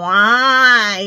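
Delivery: loud, whiny why, drawn out long. Retelling a kid asking why at the dollar store: imitating his little whiny voice. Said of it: "Just like his little whiny voice".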